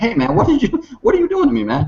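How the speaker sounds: exasperated high complaint. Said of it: "go back to him and go like".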